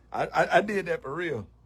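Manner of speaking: normal talking voice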